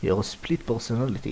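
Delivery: ordinary delivery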